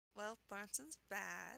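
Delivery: barely audible, dry, very quiet deadpan. Playing Lena as she gives her line to the others, kind of deadpan. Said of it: "Lena kind of deadpan delivers".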